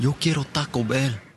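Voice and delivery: put-on Spanish-accented speech. Delivering a fast food ad catchphrase with the accent. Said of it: "with the accent and all".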